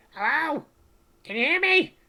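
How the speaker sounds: very high, small, tiny calling voice. Narrating a game scene where the players hear a voice echoing up, small voice. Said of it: "you hear this small voice goes".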